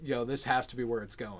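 ordinary talk, nothing marked

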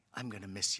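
barely audible, very soft, hushed voice. Retelling a goodbye at a shop counter: imitating someone speaking softly. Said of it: "said it very softly".

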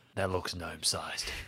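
muttered whisper to self. Voicing a character examining a talon gouge: whispering to himself. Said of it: "whispers to himself".

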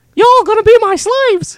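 very high, very loud, shrill cartoon mouse voice. Answering a request to do the Mickey Mouse: Mickey Mouse voice. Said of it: "Can you do the Mickey Mouse?".

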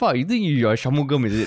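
ordinary delivery

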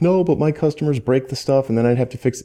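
high, panicked, blurted delivery. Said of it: "are panicking 'cause they're like".

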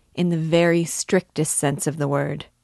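ordinary delivery

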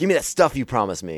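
fake-friendly, chummy, falsely sympathetic, menacing killer voice. Imitating a movie villain asking for his stuff: imitating a pseudo-sympathetic villain. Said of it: "pseudo-sympathetic to you".

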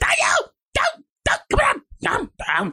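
very high-pitched, swooping, panicked voice. Retelling a mum reacting to standing three steps up: imitating a terrified mum. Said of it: "a mum that's terrified of heights, she goes".

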